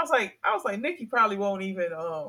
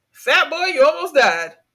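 very loud, high-pitched hollered yell; 7 semitones higher, 10 dB louder than usual. Retelling how Nikki yelled at a pedestrian from the car: imitating Nikki yelling. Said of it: "And he yells out".

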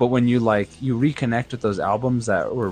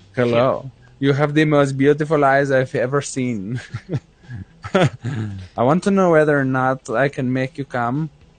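put-on, fake eastern European accent; 4 semitones higher, 5 dB louder than usual. Mocking the kind of guy girlfriends leave for, put-on eastern european accent. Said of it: "a guy that talks like this".

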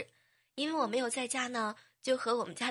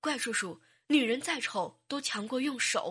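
ordinary talk, nothing marked

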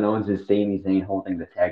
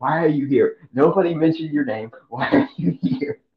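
mock furious, high, angry screaming; 8 semitones higher than usual. Retelling a wrestler's angry outburst at rivals: imitating someone screaming. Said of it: "screaming at this point".

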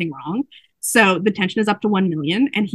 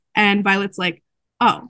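normal talking voice

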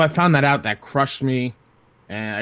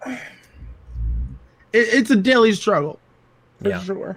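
choked-up, near tears, high swinging pitch; 7 semitones higher than usual. Answering what keeps them going, getting emotional. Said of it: "sorry, I'm getting a little emotional".

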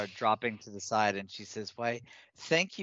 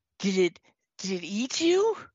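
very high, frightened, swooping and rising; 10 semitones higher, 6 dB louder than usual. Voicing Pip asking whether the creature ate the party: frightened Pip voice. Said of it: "Pip looks frightened".

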